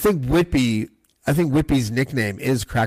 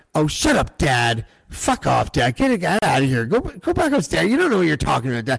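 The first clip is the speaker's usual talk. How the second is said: put-on yelling; 4 semitones higher than usual. Retelling how a friend's family treated her dad, imitating family yelling at dad. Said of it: "they would all be like".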